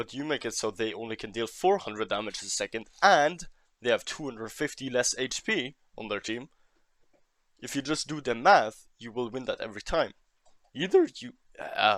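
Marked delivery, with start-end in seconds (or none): 10.7-12.0 raised voice cracking, breaking mid-phrase. A speaker explaining damage math to a player, voice cracking. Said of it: "voice crack, sorry".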